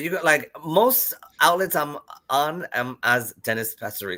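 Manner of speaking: slow, tongue-tied stumbling over the words. Asked by the interviewer where to find them, the guest gives their handle; tongue-tied. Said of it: "I'm getting tongue tied".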